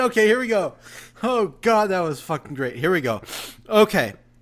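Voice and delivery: talking through tearful laughter. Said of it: "I'm crying".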